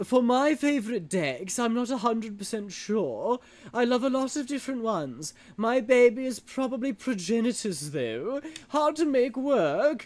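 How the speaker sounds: put-on posh British accent. Speaker talking about favourite decks, keeping up a posh British accent. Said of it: "posh British".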